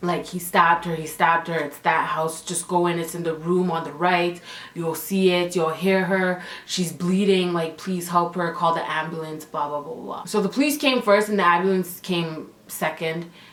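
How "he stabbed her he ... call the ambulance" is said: usual speaking voice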